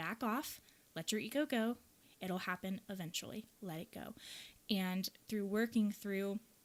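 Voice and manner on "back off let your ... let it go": plain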